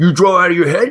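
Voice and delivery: gruff New Yorker voice. Retelling a phone call about a sent resume: gruff New Yorker voice. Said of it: "this really gruff New Yorker".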